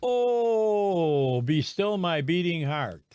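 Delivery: loud, heavy sarcasm with a long, drawn-out "oh". Reacting to news that a food program did not feed children: heavy sarcasm. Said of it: "I say that with sarcasm that can't end".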